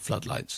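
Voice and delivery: hushed, secretive stage whisper. Retelling how a friend slunk up and spoke: stage whisper, imitating a friend. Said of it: "in a stage whisper".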